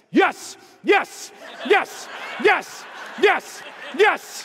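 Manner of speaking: eager, high shouting.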